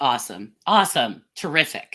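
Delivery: loud sarcastic cheer, clearly not meant. Reacting to bad news about health data: sarcastic. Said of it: "that's sarcasm for those who don't speak sarcasm".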